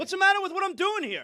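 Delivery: very high, over-the-top, loud, high-pitched delivery. Answering a criticism that he is too loud: speaking loudly. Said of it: "you could have said that a little softer".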